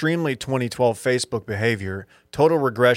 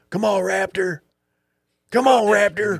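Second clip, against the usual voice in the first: very high, drawn-out country holler; 9 semitones higher than usual. Imitating a friend cheering at a baseball game: imitating Dylan's country baseball yelling. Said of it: "That's how you sound when you're yelling".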